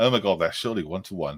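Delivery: normal talking voice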